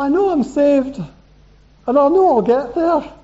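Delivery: slow, high put-on Scottish accent, each word drawn out. Speaker gives David a Good News Bible translation, in a Scottish accent. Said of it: "That's in a Scottish accent as well".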